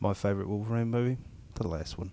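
soft New Zealand kiwi-style accent. Asked to say a line in a new zealand accent, trying it out. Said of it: "in a New Zealand accent".

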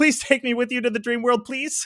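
very high, pleading, begging tone. Retelling a scene where Nami begs to be taken along: imitating Nami begging.

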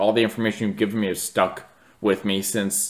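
plain

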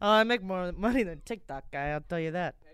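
imitated Italian accent. Repeating another speaker's boast back to them in a mock italian accent. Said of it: "That sounded so Italian".

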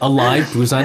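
ordinary talk

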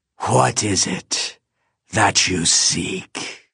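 rasping voice. A narrator reads the lich's question to the narrator, in a rasping voice. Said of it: "He said in a rasping voice".

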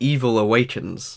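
plain

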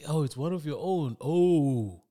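slow mocking sarcastic drawl with long stretched "oh". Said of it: "It's sarcastic".

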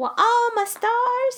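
put-on, very high southern belle voice. After the other player wins a true-or-false guess, react in a Southern belle accent. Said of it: "Why are we being Southern Belle?".

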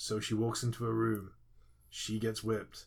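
lifeless, flat, dull droning monotone. Retelling how a colleague's review audio sounded: imitating Stuart Samson's dull paint-drying voice. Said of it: "it sounded a bit like this".

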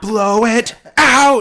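shrieking, shrill, very loud yell. Retelling a character's line from a scene: imitating a yell. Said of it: "I just yelled in the microphone".

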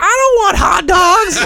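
very loud, very high, drawn-out top-of-lungs shout. Speaker recounts someone's outburst when a house handed out hot dogs: retelling a shout at top of lungs. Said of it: "at the top of her lungs".

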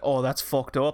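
put-on, imitated Irish accent. Speaker quotes the audience reacting, in an Irish accent. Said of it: "Did my Irish accent do anything for you?".

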